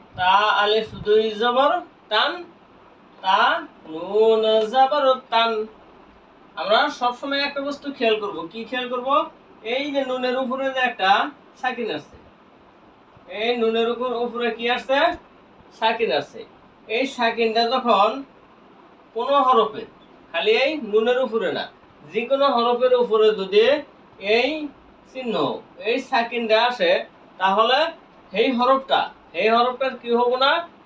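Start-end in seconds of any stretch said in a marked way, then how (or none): 0.2-5.5 slow, drawn-out spelling of each letter. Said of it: "প্রমাণ করে দেখানো হলো".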